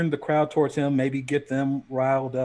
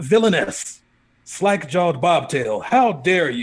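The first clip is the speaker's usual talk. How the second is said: loud, angry, accusing yell; 2 semitones higher, 5 dB louder than usual. Voicing a character who accuses a woman before a crowd: yelling accusingly. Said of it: "he starts yelling at this woman".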